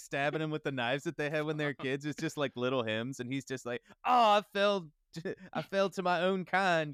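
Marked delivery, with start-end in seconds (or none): 4.1-6.9 put-on, very slow, raised southern drawl. Acting out an imagined victim's last words: put-on southern accent. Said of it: "I got it a, uh, southern accent".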